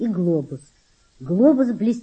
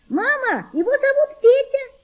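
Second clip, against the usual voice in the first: crying out in a very high-pitched shout. A girl calls to her mother about the boy, shouting. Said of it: "закричала девочка".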